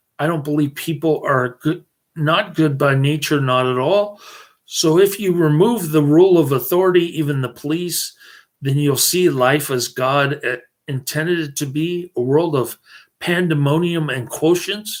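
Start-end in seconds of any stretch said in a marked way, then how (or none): none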